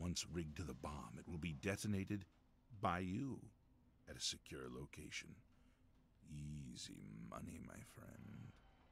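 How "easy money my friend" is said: very quiet, slow, eerie and unsettling voice. Game character closing a job offer to the listener, creepy delivery. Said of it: "That was kind of creepy the way he said that".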